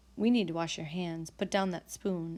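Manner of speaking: plain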